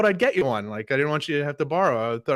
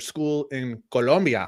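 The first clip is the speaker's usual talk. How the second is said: put-on Spanish accent and pronunciation. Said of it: "Spanish accent".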